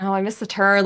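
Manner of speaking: befuddled, confused dad voice. Retelling how a dad missed the turnoff while driving, in a confused dad voice. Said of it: "like in that confused dad voice".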